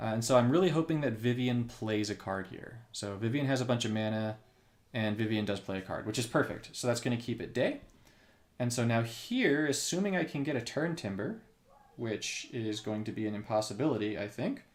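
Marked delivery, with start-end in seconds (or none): none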